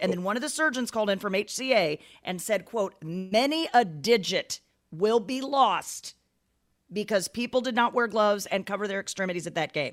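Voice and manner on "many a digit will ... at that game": ordinary talk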